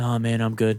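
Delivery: mild, gentle, easygoing delivery without fuss. Retelling a customer's reply when offered a cart: imitating a soft voice. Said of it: "he's very soft".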